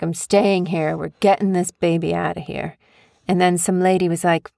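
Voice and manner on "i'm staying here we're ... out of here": normal talking voice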